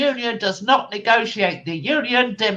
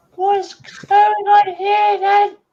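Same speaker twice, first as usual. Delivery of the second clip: elf voice, much higher and louder; 10 semitones higher, 4 dB louder than usual. Voicing an elf the group will negotiate with, in a high-pitched elf voice. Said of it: "from the high pitched voice".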